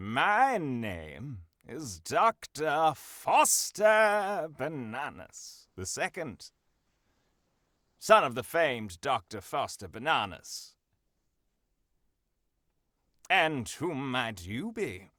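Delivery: unhurried, slow, deliberate, drawn-out speech. Introducing a doctor character in a role-play scene, giving the other player time: talking slowly. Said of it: "I'll talk slowly so you have time".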